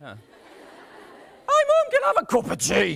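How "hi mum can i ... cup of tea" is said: put-on very high, cracking, weird teenage boy voice. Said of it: "that's why teenage boys sound a bit weird".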